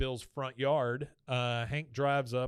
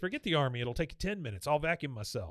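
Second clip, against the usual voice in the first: ordinary talk, nothing marked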